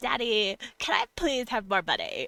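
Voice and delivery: put-on high, really annoying, pleading voice. Speaker mimicking someone asking Daddy for more, in a really annoying voice. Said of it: "like that really annoying".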